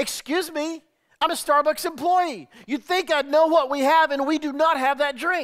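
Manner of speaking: high, loud, condescending tone.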